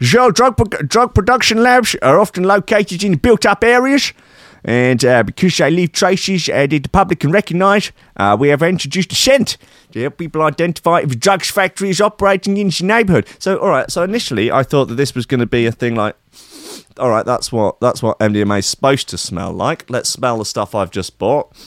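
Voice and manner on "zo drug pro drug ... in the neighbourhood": high-pitched put-on Dutch accent. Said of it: "Dutch accent?".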